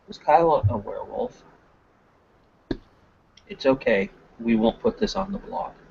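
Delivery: hushed, quiet voice kept close. Retelling leaning in across the table to ask something, in a quiet voice. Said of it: "the quiet voice go".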